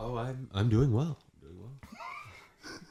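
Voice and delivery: fake-soothing, very slow and gentle put-on voice. Answering a greeting after being introduced: put-on soothing voice. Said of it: "I'm loving the voice".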